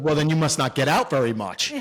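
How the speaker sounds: put-on smart-aleck, wisecracking tone in a New York accent. Retelling his comeback to a man who called him very smart: smart-ass New York accent. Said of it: "with my smart ass New York accent".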